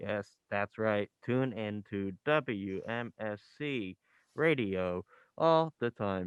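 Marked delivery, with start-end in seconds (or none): 1.3-6.3 drawn-out, very slow radio station announcer voice. Copying the radio station's id announcement just played: imitating the station-id announcer voice. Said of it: "I think I did that voice great".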